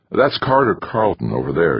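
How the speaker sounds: usual speaking voice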